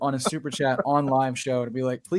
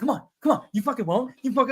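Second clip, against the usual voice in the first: mock taunting, higher pitch; 9 semitones higher than usual. Retelling how a man at a bar taunted the speaker: imitating someone goading. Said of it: "he's goading me".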